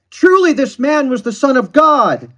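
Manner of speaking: very loud, very high, booming, thundering voice. Retelling the centurion turning to the spectators after Jesus died; thundering voice. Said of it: "He thundered it".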